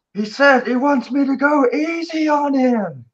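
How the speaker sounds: very high, shrill, yelled shout. Playing a wrestler in the ring, telling the crowd what the opponent whispered: yelling out. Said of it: "the kid will yell out".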